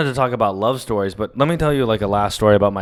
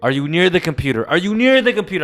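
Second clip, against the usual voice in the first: loud yell in a higher pitch; 6 semitones higher than usual. Retelling a phone call helping a grandmother print: imitating own past scream. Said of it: "I would scream".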